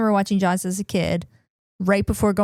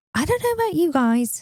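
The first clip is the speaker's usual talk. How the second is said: put-on Australian accent with the voice pitched very high; 9 semitones higher than usual. Retelling what a woman online said about sharks: imitating an Australian accent. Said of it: "in her Australian accent".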